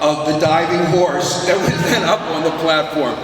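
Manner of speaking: normal talking voice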